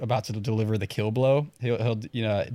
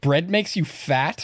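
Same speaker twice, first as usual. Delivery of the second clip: put-on shocked disbelief, high, every word dragged out; 6 semitones higher, 3 dB louder than usual. Retelling a movie scene, quoting the character's reply: imitating appalled Scott Pilgrim. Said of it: "He's just appalled".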